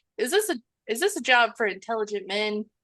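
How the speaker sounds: mock, needling, sarcastic tone with swooping pitch. Retelling a character's line from the movie: imitating a sarcastic tone.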